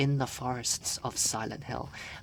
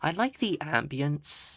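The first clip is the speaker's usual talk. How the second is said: voice breaking and cracking mid-line; 3 semitones higher than usual. Speaker commenting on the scene they are in, voice cracking. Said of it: "I think I just had a voice crack".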